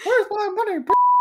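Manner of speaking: very high, squeaky cartoon mouse voice.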